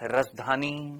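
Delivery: very slow, drawn-out delivery.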